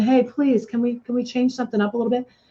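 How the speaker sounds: soft, rushed, begging pleading. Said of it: "begging for change, going".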